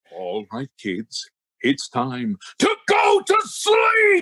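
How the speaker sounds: big, deep announcer-style voice with swooping pitch. Asked on the show how he puts his kids to bed, booming voice. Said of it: "I want to hear that sounds in the booming voice".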